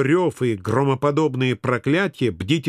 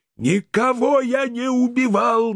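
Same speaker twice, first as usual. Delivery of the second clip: furious, pitched-up spluttering outburst with spraying spit; 9 semitones higher than usual. A man accused of murder finally snaps at the police: furious spluttering outburst. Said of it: "наконец сорвался Жубер, брызгая слюной".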